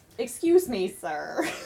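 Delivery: well-bred, refined Southern voice. A player voices their character greeting a man who won't look up: polite southern girl. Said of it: "the properly raised Southern girl".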